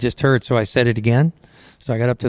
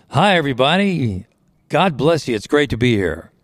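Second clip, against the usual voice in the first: mock strong, full voice without hoarseness; 3 semitones higher than usual. Speaker retells greeting everybody at a microphone, in a loud full voice. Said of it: "It was full voice".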